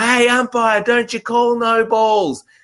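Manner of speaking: very high, drawn-out yell, calling out. At a cricket match, retelling a guy yelling out to the umpire. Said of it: "he's yelling out to the umpire".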